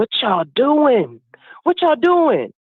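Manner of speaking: mock furious, livid scream, high and swooping. Retelling the auntie's phone call, imitating a furious scream. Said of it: "she's screaming. She's livid".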